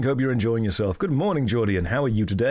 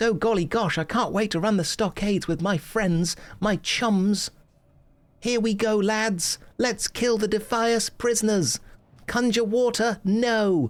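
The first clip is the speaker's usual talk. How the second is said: voice nudged a little higher in pitch; 10 semitones higher than usual. As the stream keeps going, the voice turns a little more high-pitched. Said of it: "it gets a little bit more high pitch".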